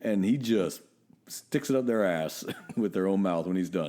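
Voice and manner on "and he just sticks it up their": plain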